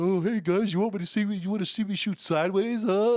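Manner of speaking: high, eager, bragging, show-off dork voice. Imitating a dork showing off to guys: imitating a show-off dork. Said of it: "you got a dork who's like".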